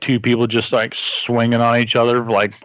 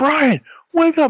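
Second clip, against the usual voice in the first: mock very high, livid, angry voice. Speaker retelling her reaction after he leapt onto the bed: imitating her angry. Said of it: "she was like so pissed and so livid".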